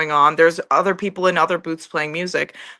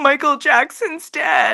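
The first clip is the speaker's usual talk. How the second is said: mock blubbering sobs, high and swooping; 8 semitones higher than usual. Retelling a video of a little boy crying to his mom: imitating a sobbing boy. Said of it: "he was crying, sobbing".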